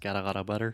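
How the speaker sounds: fast, flapped t in got and lot. Teaching the English flap T with a phrase: said fast with flapped t's. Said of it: "if you say that really fast".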